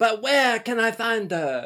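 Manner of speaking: put-on acted, stagey kid voice. Retelling a kid's audition scene: imitating a kid's French play monologue. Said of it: "does a monologue and he's just like".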